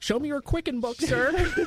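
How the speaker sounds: high, nerdy put-on government agent voice.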